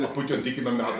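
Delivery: ordinary talk, nothing marked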